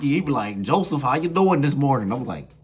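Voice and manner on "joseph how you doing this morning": goofy-sounding put-on New York accent. Retelling a shipmate's morning greeting: imitating a new york accent. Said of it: "his accent was so funny to me".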